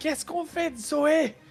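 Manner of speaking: high-pitched, voice-tearing, straining shout. Looking at the friends and trying to be heard: shouting. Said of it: "en criant même".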